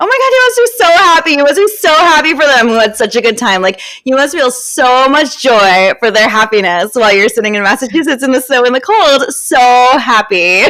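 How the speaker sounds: insincere-sounding voice. Retelling what the speaker said to a friend, in a totally fake-sounding voice. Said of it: "totally fake sounding voice".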